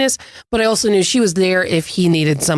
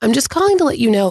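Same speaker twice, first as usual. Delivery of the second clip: put-on nervous voice, faster; 4 semitones higher than usual. Retelling a school staffer's phone call to you, imitating a nervous caller. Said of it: "she was like nervous about having to have".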